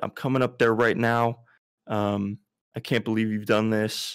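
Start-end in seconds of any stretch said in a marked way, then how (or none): none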